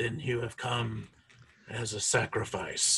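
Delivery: echoing sepulchral voice. Narrating a corpse speaking to Astartes, in an echoing sepulchral voice. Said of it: "that this kind of weird echoing sepulcher voice echoes out of the mouth".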